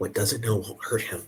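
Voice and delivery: soft, whispered stage whisper. A player's character replies to a message, whispered reply. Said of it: "sort of whisper reply".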